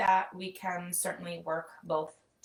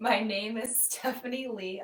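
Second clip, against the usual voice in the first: speaking through laughter, higher pitch; 4 semitones higher than usual. Introducing oneself at the start of class, laughing while talking. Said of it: "I'm laughing at these animals".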